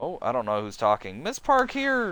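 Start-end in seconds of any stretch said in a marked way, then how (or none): 1.2-2.1 very high-pitched, put-on girlish voice. Reading a story aloud and voicing a character: random girl voice. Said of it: "I just did random girl voice".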